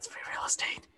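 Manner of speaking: gentle breathy whisper.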